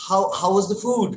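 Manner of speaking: ordinary talk, nothing marked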